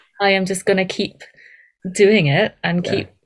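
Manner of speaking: ordinary talk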